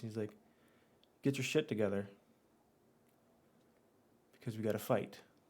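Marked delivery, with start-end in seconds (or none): 1.2-5.2 hushed, low, close whisper. A player voices his character turning to her: low whisper. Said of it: "say in a lo- like one of those low whispers".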